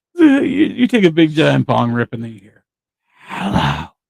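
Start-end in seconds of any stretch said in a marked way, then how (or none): 3.3-3.9 put-on creepy voice, lower pitch. Retelling a sudden voice heard after a bong rip: imitating a creepy voice. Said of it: "talking to you in a creepy fucking voice".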